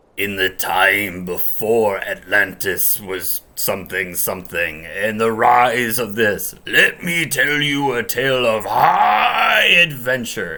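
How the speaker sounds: gravelly, slow, loud, drawn-out wizard narrator voice. Recalling the actor's opening introduction as the wizard, gravelly Mako narrator voice. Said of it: "this really gravelly voice where he's like".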